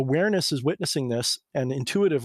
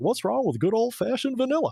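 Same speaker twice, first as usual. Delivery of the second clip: very high, cartoon-style character voice; 10 semitones higher than usual. Speaker does a voice that his wife finds hilarious: Hank Hill voice. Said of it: "I'll do a Hank Hill voice".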